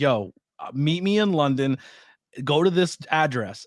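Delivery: ordinary talk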